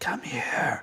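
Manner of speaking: hushed, barely voiced whisper. Game master voices a woman who asks the player to approach, whispering. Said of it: "You can hear her whispering".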